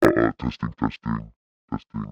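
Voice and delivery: very low, deep, monstrous processed voice. Testing voice changer settings on a mic, trying the monster setting. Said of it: "And then we've got monster".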